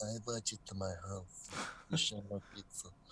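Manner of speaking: put-on, very soft, hushed mumbling through stuffed cheeks. Pitching a scene idea, acting out a guy's line: mimicking talking with stuffed cheeks. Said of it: "he's got these things in his cheeks".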